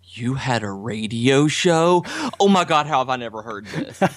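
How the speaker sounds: acted surprised voice. Telling how his wife reacted to hearing his old radio voice, imitating her surprise. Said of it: "my wife just kind of looked at me and was like".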